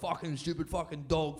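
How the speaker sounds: angry rant with swearing, going off. Speaker imitates a man riding a push bike, going off: imitating an angry rant. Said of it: "Just going off".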